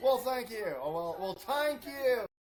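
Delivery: fake Irish brogue accent. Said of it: "Justin said he loved the Irish accent".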